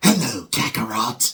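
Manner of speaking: loud, high-pitched hissing voice. Recalling Vegeta's first voice actor, who spoke like this: hissing Vegeta impression. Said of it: "his voice having an annoying hiss".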